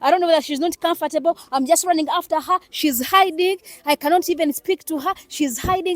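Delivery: high, loud, excited chattering.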